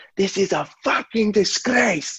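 furious, outraged shout, high pitch, slow pace.

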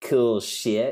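coarse, crass, judgmental delivery. Retelling a woman's reaction to a sign, the speaker mimics her crass tone. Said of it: "said it with just like such like a crass, you know, to her voice".

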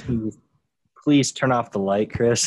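very loud, full-volume begging. Acting out a scene: imitating Matt pleading with Chris. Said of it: "He goes He goes".

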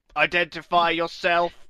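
in-character voice, called out. A player in a game shouts at a goblin: in-character shout. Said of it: "I'll shout that".

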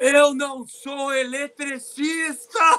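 very slow, loud, drawn-out hollered outburst. Retelling a phone argument with someone, retelling a shout. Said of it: "e ele gritava".

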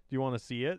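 plain

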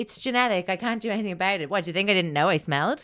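cocky, self-assured, fast, totally confident delivery. Describing a show scene where Gordon answers Sam, imitating Gordon, mock super-confident. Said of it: "Gordon's like super confident guy and he's like".

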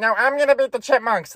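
high, squeaky chipmunk voice. Retelling a cartoon race, voicing the Chipettes, Chipettes impression. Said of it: "That was my best Chipettes impression".

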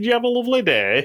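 put-on very high, thick Yorkshire accent, laid on heavily. Retelling how a man spoke while picking up his child, in the thickest yorkshire accent. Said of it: "he's talking in the thickest Yorkshire accent".

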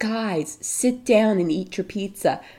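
ordinary talk, nothing marked

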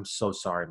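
low, soft, mock heartfelt, earnest tone. Retelling the film's last scene, where Bill Hader's character hugs McLovin, imitating a sincere apology. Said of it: "he's really selling".

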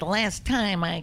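put-on baby talk spoken around a cigar in the mouth. Speaker voicing an infant for co-hosts, baby impression with cigar. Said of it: "that's my baby impression with a cigar in its mouth".

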